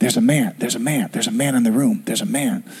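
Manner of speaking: put-on whisper. Retelling what a partner whispered in the middle of the night, imitating a whisper. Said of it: "She whispers to me".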